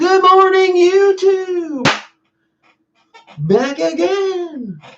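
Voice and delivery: put-on, really high voice in video-intro presenter style. Describing someone who sounds familiar, imitate his really high voice. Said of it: "His voice is real high like this".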